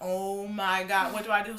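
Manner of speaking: slow, mock anxious, at-a-loss panic. Retelling thoughts beside a car on fire: retelling own panicked words. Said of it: "I'm starting to panic".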